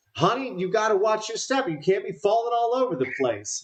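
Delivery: very high, shrill shout. A narrator voices a character calling from the office area, Abigail shouting. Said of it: "and Abigail shouts".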